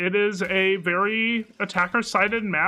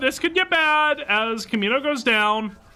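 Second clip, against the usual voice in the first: voice breaking midway, cracking and pitched up; 6 semitones higher than usual. Caster calling a two-versus-two round as a player goes down, voice cracking. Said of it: "Excuse the voice crack".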